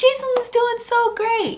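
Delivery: high, slow, mock gushing. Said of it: "they're like".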